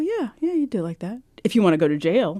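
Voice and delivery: put-on bone-dry, teacherly, dry-humored professor voice. Retelling what the accounting professor would answer: imitating a dry-humored professor. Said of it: "this real dry sense of humor".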